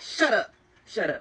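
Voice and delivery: slow, deliberate, weighty, forceful delivery. Imitating a teacher telling a child to be quiet: imitating a forceful "shut up". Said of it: "putting a little bit of force behind that "shut up."".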